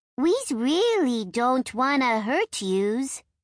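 shrill, harsh, high, rasping creature voice. An imp calls from between the trees to the narrator's group: harsh, high-pitched, raspy voice. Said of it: "a harsh, high-pitched, raspy voice".

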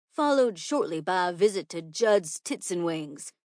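ordinary delivery, nothing marked

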